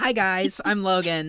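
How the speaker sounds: high, very slow, deliberate delivery. Doing an impression of Logan for the others: imitating Logan. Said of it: "This is my best impersonation of him".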